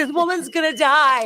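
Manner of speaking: put-on near-sobbing voice. Retelling what the speaker said as an ambulance was coming, retelling half crying. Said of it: "I'm like half crying".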